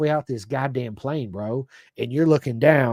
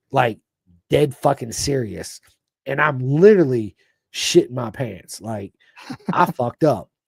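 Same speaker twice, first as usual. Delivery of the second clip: plain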